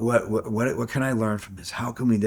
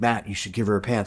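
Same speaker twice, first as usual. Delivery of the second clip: ordinary talk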